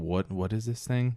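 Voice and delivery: ordinary talk, nothing marked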